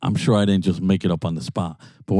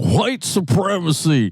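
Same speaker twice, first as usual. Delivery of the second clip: put-on, high-pitched screaming; 9 semitones higher than usual. Retelling a comedian up on stage, imitating someone screaming. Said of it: "he's up there screaming, like".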